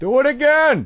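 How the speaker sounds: acted dry sarcasm. Imitating the old neighbor heard through the floor: imitating sarcastic neighbor. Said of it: "he's really sarcastic".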